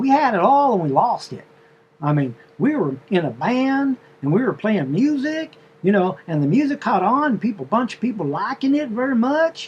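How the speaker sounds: put-on southern drawl. Retelling how a woman spoke to a man, imitating a southern drawl. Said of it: "a southern drawl or whatever".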